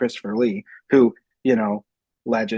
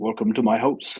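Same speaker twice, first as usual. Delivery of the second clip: put-on the word "house" pronounced almost with a Canadian accent. Imitating Christopher Lee in Dracula: Christopher Lee as Dracula. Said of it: "he says "house," almost like a Canadian".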